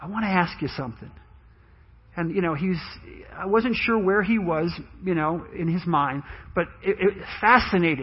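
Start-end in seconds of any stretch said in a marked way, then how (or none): 0.0-1.1 gentle, very soft, hushed, barely raised voice. Recalling what their father asked them from his bed, very soft voice. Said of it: "he said to me in a very soft voice".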